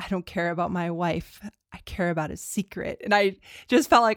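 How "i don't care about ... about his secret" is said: cold put-on voice. Recounting a film scene, speaker acts out the line in a cold delivery. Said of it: "in like this very cold delivery".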